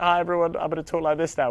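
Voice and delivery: put-on American accent. Speaker retells greeting everyone the morning she started talking American: put-on American accent. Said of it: "I was talking American".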